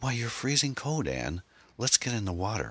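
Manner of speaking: gentle, mild delivery, pitched a little high. A man clasps Ann's hands and speaks to her, said gently. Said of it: "he said gently".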